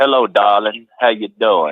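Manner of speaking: put-on deep Southern accent. Imitating how people talk further south: Gone with the Wind Southern accent. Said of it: "it's like that Gone with the Wind".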